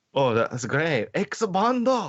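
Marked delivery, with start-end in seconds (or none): 1.2-2.1 very high, terrible fake Japanese accent. Joking along after another speaker mentions a terrible japanese accent. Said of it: "in a terrible Japanese accent".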